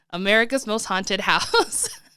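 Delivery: plain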